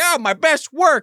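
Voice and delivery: proud, high-pitched, slow, loud mock villain gloating. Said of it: "He's like".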